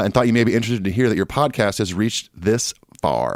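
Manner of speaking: ordinary delivery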